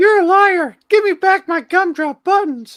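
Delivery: shrill, high, very loud, shrieking cartoon voice. Imitating a friend who sounded like Shrek's Gingerbread Man. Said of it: "sounded just like the gingerbread man on Shrek".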